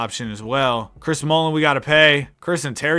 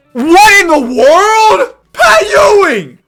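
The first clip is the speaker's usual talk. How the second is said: very loud, very high, swooping, drawn-out yells; 13 dB louder than usual. Reacting aloud while managing a basketball roster; yelling. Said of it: "I shouldn't be yelling like this".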